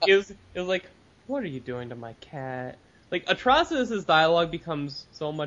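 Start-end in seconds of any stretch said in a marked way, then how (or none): 1.3-2.8 low, mellow, lovestruck, adoring voice. Reading a villain's comic line as if he were mellow: totally mellow, lovestruck Atrocitus voice. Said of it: "totally mellow and kind of in love".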